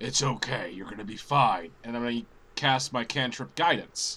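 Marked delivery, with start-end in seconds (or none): 0.0-1.7 hushed whisper, much lower pitch. Playing a cleric in a game, leaning over to a companion, whispering. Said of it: "lean over to Saoirse and just whisper".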